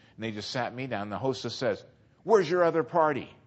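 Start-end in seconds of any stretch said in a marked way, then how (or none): 2.2-3.2 put-on, very loud, shrill accusatory tone. Retelling a hostess's question at a restaurant: imitating an accusatory tone. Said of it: "in a very accusatory tone".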